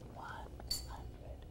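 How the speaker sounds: whispered speech.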